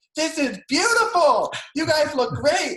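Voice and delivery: very high-pitched, loud scream. Retelling what the cinematographer screamed during filming, imitating the cinematographer screaming. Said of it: "screaming like".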